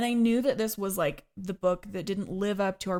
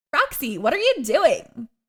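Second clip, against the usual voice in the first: exaggerated LA accent; 5 semitones higher, 7 dB louder than usual. Speaker quotes a line she heard mocked in an accent: stereotypical LA accent. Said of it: "it was so L A".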